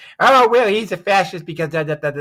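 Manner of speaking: ranting, loud, shrill screeching and screaming. Imitating people on the left on social media: imitating people screaming. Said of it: "people on the left screaming".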